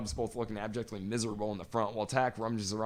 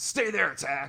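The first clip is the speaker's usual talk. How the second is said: stern, firm, pitched-up voice; 5 semitones higher, 4 dB louder than usual. Quoting a character's order from a story, in a put-on firm commanding voice. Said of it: "I think I've used that voice with my kids".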